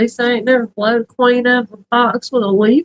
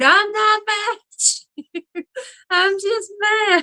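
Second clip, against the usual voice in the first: very high, stretched-out shriek; 9 semitones higher, 4 dB quieter than usual. Telling a story, quoting what he screamed back then: retelling his scream. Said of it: "He screamed".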